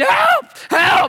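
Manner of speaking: panicked, desperate yell, very high-pitched and loud. Telling how you flipped the boat while your family threw a Frisbee, retelling a yell for help. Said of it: "I'm yelling".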